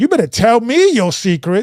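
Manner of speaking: demanding with attitude. Acting out Delilah demanding Samson's secret: imitating Delilah with an attitude. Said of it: "went to Samson with an attitude".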